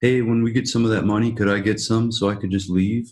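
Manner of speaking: normal talking voice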